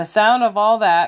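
ordinary delivery

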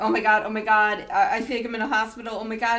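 put-on panicked voice. Recounting hearing machines beep while hooked up, retelling own panic. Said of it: "and I'm freaking out".

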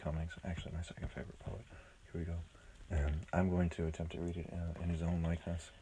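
barely audible, very quiet, soft, hushed talking. Announcing a poem reading to listeners: very quiet voice. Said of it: "When you talk like that, no one's going to hear you".

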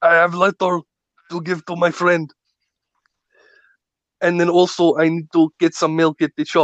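mock Austrian accent in action-hero voice. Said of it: "Arnold's going".

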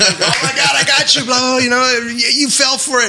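talking through laughter. Retelling a prank being revealed: imitating someone laughing while talking. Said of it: "She's busting out laughing".

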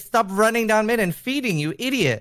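pretend high-pitched mock yell.

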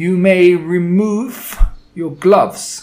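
loud, hard, grating, snarling, metallic, drawn-out witch rasp. Narrator reads the witch shouting at the seated witches, in a harsh metallic rasp. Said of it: "hard metallic quality ... It rasped, it grated, it snarled".

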